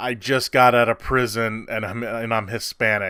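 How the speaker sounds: usual speaking voice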